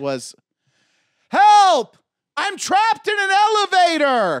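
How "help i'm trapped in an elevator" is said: very slow, very high, loud drawn-out cry. Asked to show how they screamed when trapped: retelling a scream for help. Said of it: "how are you screaming?".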